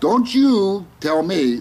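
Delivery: heavy, laid-on New Jersey accent. A self-described jersey guy addresses an eye-rolling listener, jersey accent. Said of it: "see the way I said that?".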